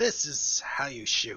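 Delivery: shouting goblin voice. Narrating a game, voicing a goblin speaking to the cleric, yelling goblin voice. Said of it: "the goblin yells and says".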